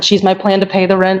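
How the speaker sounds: ordinary delivery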